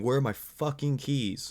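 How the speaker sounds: mock small, light, high, mild screaming tone. Retelling how the driver screamed after the car alarm started: imitating someone screaming. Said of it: "he starts screaming".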